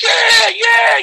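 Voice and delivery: very high, roaring cheering shout, stadium-like.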